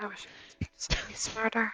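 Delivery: muttered under the breath. A character being questioned about burnt bodies, muttered under her breath. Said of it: "She says that like under her breath".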